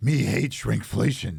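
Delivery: low, rough and gruff voice. Joking about shrinkflation in character: Cookie Monster voice. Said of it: "you got to do it in the Cookie Monster voice".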